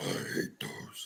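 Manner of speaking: near-silent, hushed, breathy whisper. Repeating a line just said, as an impression: John impression. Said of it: "Here's my John impression".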